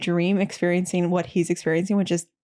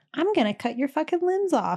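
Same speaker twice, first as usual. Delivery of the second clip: high-pitched shadow-creature voice; 9 semitones higher than usual. Retelling what a woman said one night, in her high-pitched shadow voice. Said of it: "in her high pitched like shadow voice".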